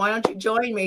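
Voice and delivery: ordinary talk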